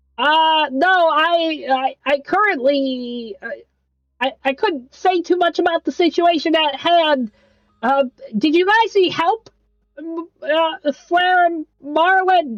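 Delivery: nasally voice. The narrator voices Albie chiming into the conversation, Albie's nasally voice. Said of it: "Albie's nasally voice kind of pierce through your skull".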